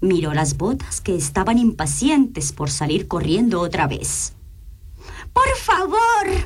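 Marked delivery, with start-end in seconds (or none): 5.3-6.5 shrill, very high yell, stretching out favor. Narrating a story, the princess shouts to the wizard: shouting. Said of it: "gritó".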